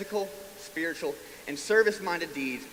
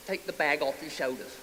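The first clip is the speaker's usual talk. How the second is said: put-on British accent. Retelling what an old man on the street said, in a british accent. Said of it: "in a British accent".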